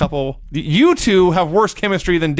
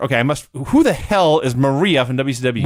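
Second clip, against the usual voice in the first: ordinary talk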